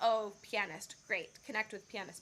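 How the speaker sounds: usual speaking voice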